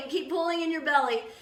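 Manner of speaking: plain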